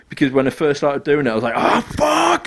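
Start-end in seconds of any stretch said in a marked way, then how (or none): 1.6-2.5 put-on full rage shriek, very high, furious. Retelling raging at a game's enemies: imitating own screaming. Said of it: "and just screaming obscenities".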